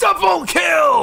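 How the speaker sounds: very high-pitched, loud, hyped shout. Comparing takes of a "double kill" voice line: very high energy. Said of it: "really high energy".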